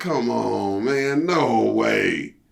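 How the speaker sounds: play-acted, very slow, rough, angry, pissed-off voice. Retelling a protest at losing the gig: retelling an angry protest. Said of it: "I was pissed".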